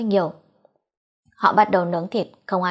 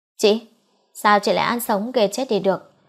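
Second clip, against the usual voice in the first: plain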